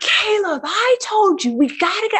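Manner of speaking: very high, exasperated, shrill screaming yell. Retelling screaming at the kid to hurry up: imitating a scream. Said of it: "So I scream".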